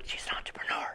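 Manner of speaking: very quiet stage whisper. Describing a self-employed woman, the speaker whispers the word entrepreneur: whispered. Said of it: "but I'll whisper it".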